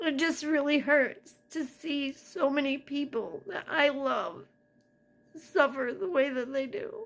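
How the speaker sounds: tearful voice, crying while talking. Apologizing for a long video, explaining why it hurts: crying while talking. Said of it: "I'm sorry for crying".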